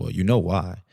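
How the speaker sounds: ordinary delivery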